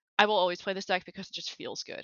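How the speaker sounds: ordinary talk, nothing marked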